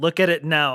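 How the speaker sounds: put-on insistent tone. Retelling how Bill demanded they watch the announcement: imitating Bill's insistent tone. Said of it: "I could tell in the tone of voice that this was non-optional".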